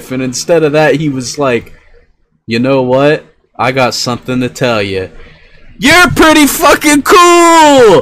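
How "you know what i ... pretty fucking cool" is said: mock hyped-up outburst. Retelling what another guy said instead of an insult, mock hyped-up. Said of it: "that dude is just too hyped up".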